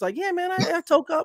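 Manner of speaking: very high, froggy, puppet-like cartoon voice. Imagine Patrick Mahomes coming out with an admission, as Patrick Mahomes in Kermit the Frog voice. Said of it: "like in his little Kermit the Frog voice".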